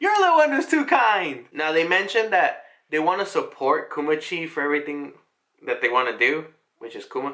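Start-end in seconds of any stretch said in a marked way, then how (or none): 0.0-1.5 very high, shrill shouted voice. Retelling a scene where she turns around at him: imitating someone yelling. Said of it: "yelling at him and is like".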